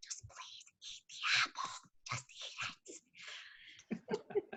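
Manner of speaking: soft, slow, drawn-out hushed whisper. Retelling pleading with a child during a call: retelling a whisper.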